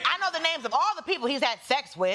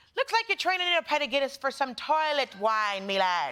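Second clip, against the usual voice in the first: pleasant, charming put-on Irish accent. Joking that a guilty verdict sounds pleasant in an Irish accent. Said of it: "you want to hear it in an Irish accent".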